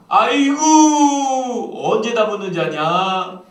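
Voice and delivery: high, loud, drawn-out wailing lament.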